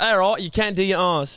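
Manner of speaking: put-on Australian accent. Answering a request to teach lisp lessons: put-on australian accent. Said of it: "teach me in an Australian accent".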